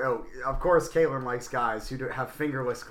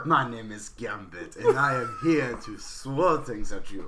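very thick, over-the-top cartoon French accent; 2 semitones lower than usual. Introducing the character while the others tease the voice: Gambit voice. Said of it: "Why are you doing Pepe Le Pew?".

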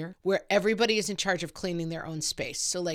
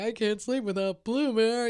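put-on higher-pitched crying child voice. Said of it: "a whole night of crying".

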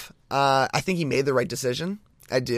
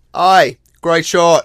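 attempted Australian accent, louder; 5 semitones higher, 13 dB louder than usual. Interrupting the show's intro with a quick remark in an attempted australian accent. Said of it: "anytime you attempt an accent".

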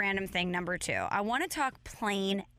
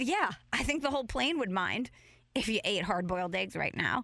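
normal talking voice

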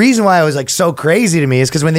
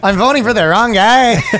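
put-on, pitched-up Latin American accent; 6 semitones higher than usual.

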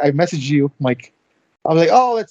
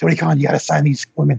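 low, rough, creaky seductive voice; 4 semitones lower than usual. Imitating Kenny Omega urging Tony Khan to sign women: Kenny Omega sex voice. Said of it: "Kenny Omega in his sex voice says".

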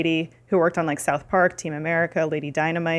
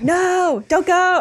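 scream, pitched much higher than normal; 13 semitones higher, 4 dB louder than usual. Describing a scene, speaker acts out Will Arnett yelling after her: retelling Will Arnett screaming. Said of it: "he just keeps screaming".

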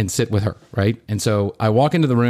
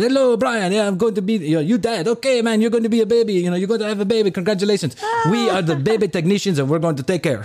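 very high-pitched, put-on Nigerian accent; 10 semitones higher than usual. Retelling what two baby technicians said at the birth: imitating a nigerian accent. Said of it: "that sounded like the accent they had".

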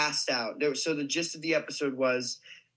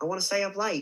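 put-on theatrical Australian accent, higher pitch; 6 semitones higher than usual. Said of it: "in an Australian accent".

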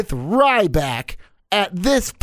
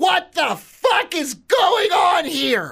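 shrieking, very high-pitched, all-out scream; 11 semitones higher than usual. Telling listeners to look at the TV and react, screaming. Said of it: "and then scream".

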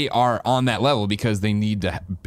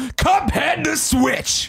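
put-on raspy voice, very high mock fury. Reading a listener's question aloud, the speaker performs a put-on Angry Greg voice. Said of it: "Angry Greg voice".

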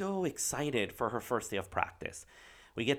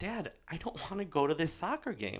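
put-on sobbing, words broken up by crying; 6 semitones higher, 5 dB quieter than usual. Retelling a daughter's words in the back seat of the car: imitating Emma sobbing. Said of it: "and she's sobbing, and she's like".

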